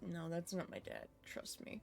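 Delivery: very quiet whispered aside. Whispering to a companion in character in a game: whispering in character. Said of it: "I just whisper over to Zabid".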